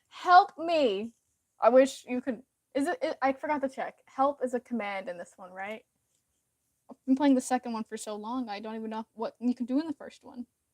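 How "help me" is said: mock scream, high and loud. Retelling screaming to game companions during a Hydra fight, imitating a scream. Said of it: "As I'm screaming to them".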